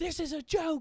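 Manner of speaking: high freaking-out outburst.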